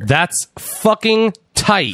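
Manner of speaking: high exclamation sounding angry though delighted. Reacting to someone's news about hanging out with the NXT roster; sounding angry. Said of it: "I know I sound angry".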